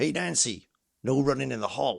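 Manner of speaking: put-on menacing horror villain voice. Quoting the hall monitor from the dream scene: Freddy Krueger voice. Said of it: "in a typical Freddy Krueger way".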